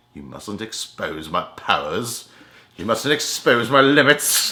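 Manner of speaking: mock, slow, theatrical, dramatic wounded superhero lament.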